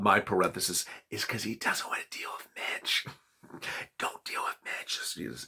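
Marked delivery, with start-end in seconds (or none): 1.1-5.0 hushed, breathy whisper under the breath. Commenting on a politician's motives, then whispering: whispering. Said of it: "why am I whispering?".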